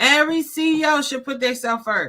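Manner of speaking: high, emphatic shouting. Host of episode eighty-eight addressing every CEO listening, yelling. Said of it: "and I'm yelling because it's important".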